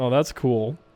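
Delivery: condescending, dismissive, snide tone. Reading a viewer's question aloud and answering it mockingly: dismissive, like a real dick. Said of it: "I could do it like a real dick".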